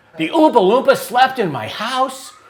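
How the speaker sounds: very high, very loud, shrill, full-lunged scream. Retelling what a child said on hearing the news: imitating a scream at the top of his lungs. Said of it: "He screamed at the top of his lungs".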